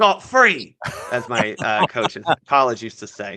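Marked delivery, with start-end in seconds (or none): 0.0-0.8 clumsy put-on English accent, raised and high. Quoting what a college coach used to say, in a bad English accent. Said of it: "excuse my bad English accent".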